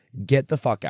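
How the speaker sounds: normal talking voice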